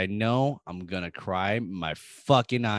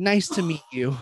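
friendly put-on voice, higher; 7 semitones higher than usual. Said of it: "That's really good".

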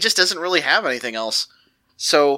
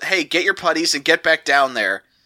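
ordinary talk, nothing marked

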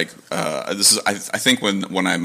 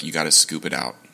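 put-on whisper, lower; 3 semitones lower than usual. Retelling what a father said to the speaker: imitating a whisper. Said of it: "he just kinda whispers".

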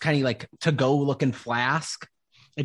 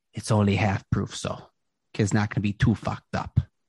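hushed whispering aside; 4 semitones lower than usual. Game master voicing a gnome selling potions, whispering to a player. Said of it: "whispers over to you".

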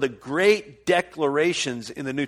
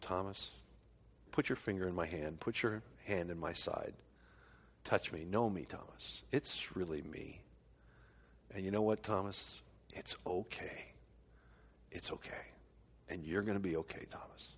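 tender, very gentle, breathy, hushed near-whisper; 9 semitones lower, 19 dB quieter than usual. Act out how you think Jesus spoke to Thomas, whom he loved deeply, imitating Jesus speaking very gently. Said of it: "he very gently said to him".

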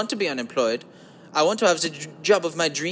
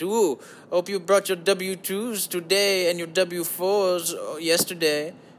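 evil German accent, put-on, slower. On a podcast, the speaker slips into an evil german accountant voice. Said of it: "I sound like an evil German accountant".

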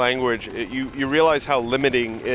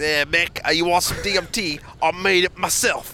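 put-on drawn-out, slow, high-pitched Australian accent; 5 semitones higher than usual. Asked if Mick is still Australian, the speaker answers in an Australian accent. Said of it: "Excellent Australian accent".

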